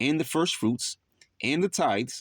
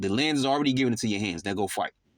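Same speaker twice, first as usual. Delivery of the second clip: normal talking voice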